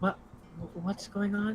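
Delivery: quiet whispering. Player in a game meeting up with Marcus, whispering. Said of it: "whisper like".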